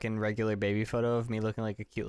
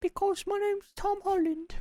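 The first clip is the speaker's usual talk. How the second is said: very high-pitched British voice. Mimicking how a British actor talks, doing a high-pitched Tom Holland impression. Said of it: "why do you make their voice so high pitched?".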